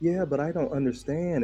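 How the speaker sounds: put-on sweet female voice. Retelling what a woman said in a conversation: imitating a sweet woman. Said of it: "beware the sweet bitch".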